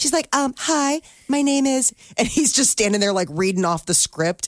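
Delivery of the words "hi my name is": mock girly voice, higher, man's voice put on. Imitating a mustached grip reading a girl's part: imitating a man putting on a girl's voice. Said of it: "he changes his voice to the girl".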